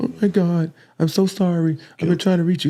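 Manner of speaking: put-on tearful voice. Retelling a phone call from someone crying and apologizing: imitating someone crying on the phone. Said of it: "with her crying on the phone".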